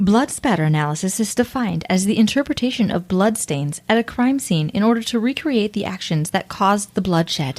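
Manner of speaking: automated sat-nav voice. Reading a definition aloud to the other speaker, in a GPS navigation voice. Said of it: "That's your turn left at the stop sign voice".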